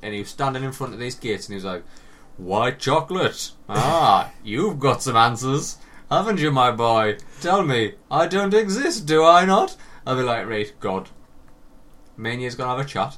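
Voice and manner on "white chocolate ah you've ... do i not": put-on huge, booming, slow, rising voice. Retelling meeting a giant figure standing at some gates: booming God voice. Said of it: "with a booming voice".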